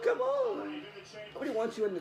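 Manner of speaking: very high, mocking imitated voice. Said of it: "Did you hear her?".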